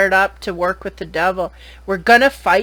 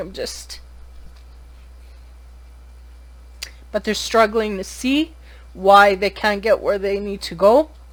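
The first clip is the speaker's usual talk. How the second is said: tearful voice, speaking through tears while crying. Speaking to listeners who may lack a diagnosis, crying while speaking. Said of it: "I'm sorry, I'm crying".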